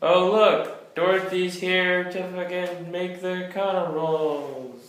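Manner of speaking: heavy sarcasm, stretched "rolls". Commenting on who will make the rolls: sarcastic tone. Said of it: "If you didn't hear the sarcasm in my voice".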